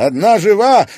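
shrill, high shout, very loud. One of the yachtsmen calls out from the pier amid the rescuers' cries: shouted. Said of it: "крикнул кто-то из яхтсменов".

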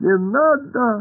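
very high, shrill, thin, piercing voice. Pashka raises a mop at a blob on the wall; it answers in a thin, piercing voice. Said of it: "тонкий, пронзительный голос".

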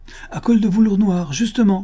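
high, exultant, triumphant cry. Madame Renaud answers the police commissioner: triumphant cry. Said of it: "s'écria madame Renaud triomphante".

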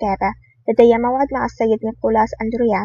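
plain reading voice

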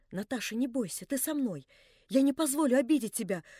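whispered, embarrassed, abashed. Narrator reads Alyosha speaking to Natasha: embarrassed whisper. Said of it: "прошептал смущенный".

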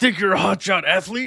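shouting camp coach voice. Acting out the coach shouting at a new camper: Coach Rex shouting. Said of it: "I'm the coach standing in the door".

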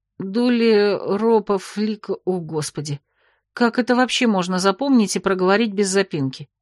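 ordinary delivery, nothing marked

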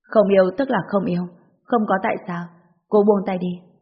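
ordinary delivery, nothing marked

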